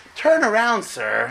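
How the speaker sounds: female sat-nav announcer voice. Retelling being told to turn around while driving, in a put-on navigation lady voice. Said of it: "you have like this lady voice telling you".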